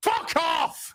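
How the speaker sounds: slightly irritated, mildly angry tone. Ranting about being called they or she, the speaker snaps, a little angry. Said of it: "It's a little angry".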